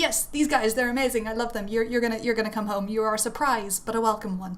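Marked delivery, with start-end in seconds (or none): none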